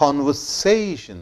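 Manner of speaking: say stressed with a falling end. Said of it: "more stress is laid on syllable say".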